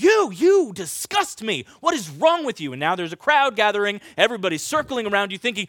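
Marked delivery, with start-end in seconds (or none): 0.0-2.7 mock disgusted, accusing, yelled telling-off. Acting out someone in a store yelling in your face: acting out someone yelling. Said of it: "start yelling at you".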